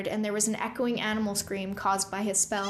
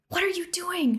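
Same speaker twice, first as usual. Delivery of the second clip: hissed out, very high; 9 semitones higher than usual. As a companion lets go of his hand and draws her swords, he hisses. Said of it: "Rune hissed".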